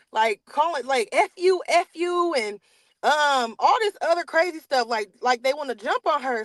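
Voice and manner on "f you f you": very slow, high, dragged-out screaming. Retelling how two people screamed at mom in a corner: imitating people screaming. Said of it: "they're screaming at her".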